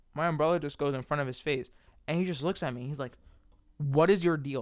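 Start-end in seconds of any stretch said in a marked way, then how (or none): 3.7-4.6 loud, angry, put-out voice. Quoting the old man whose face the umbrella went in front of, in a mock-angry voice. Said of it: "Like with the only like angry voice".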